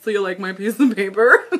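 laughing while talking. Asking viewers about holding up a piece of paper, laughing while talking. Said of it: "I'm cracking myself up".

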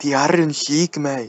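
put-on Irish accent. Teasing the other speaker about going Irish in an impression: mock Irish accent. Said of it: "I go Irish when I do it".

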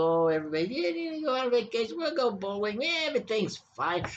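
syrupy, prim niceness. Speaker imitates people he finds too polite, mock polite tone. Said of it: "these polite little".

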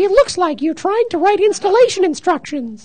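squeaky falsetto, very high and loud. Repeating a line as an anthropomorphic paperclip would, in a high falsetto voice. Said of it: "I have falsetto, too".

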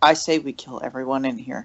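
hushed, conspiratorial half-whisper, spoken aside. Half-whispering in character to Roderick, suggesting they kill everyone: half-whispering. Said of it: "I'm gonna whisper to Roderick".

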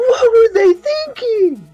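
put-on yell. Calling for a clip to be played, act it out as the Angry Video Game Nerd yelling. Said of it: "the angry video game nerd yelling".

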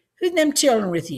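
fast, blunt, insistent, demanding tone. Reading a story, an old woman speaks to Grandma, demanding. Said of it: "she demanded of Grandma".

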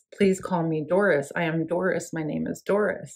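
ordinary delivery

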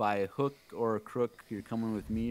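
ordinary delivery

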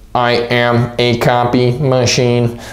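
strange, flat robotic monotone voice. A teacher showing students how to work like a copy machine: strange robot voice. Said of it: "so I'm just gonna do a strange voice".

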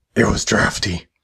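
evil, menacing, sinister villain voice. Answering a question in a skit as the evil voice guy: evil voice. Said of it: "Evil voice guy".

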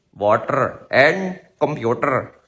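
put-on said slowly in an Indian accent. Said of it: "They would say".

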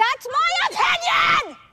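high-pitched, loud yelling.

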